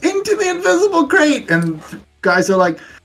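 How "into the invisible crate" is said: shouting. Voicing a character calling people into an invisible crate: shouting to the guys. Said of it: "you just start shouting to the guys".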